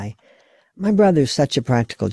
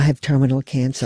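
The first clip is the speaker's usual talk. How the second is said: ordinary talk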